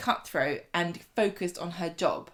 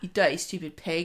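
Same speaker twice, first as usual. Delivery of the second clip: plain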